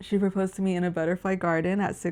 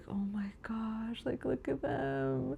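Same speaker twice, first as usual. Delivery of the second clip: mock marveling, utterly awed, wonder-struck; 4 semitones higher, 10 dB quieter than usual. Retelling seeing the butterflies everywhere, imitating own awed voice. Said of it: "I was just so in awe".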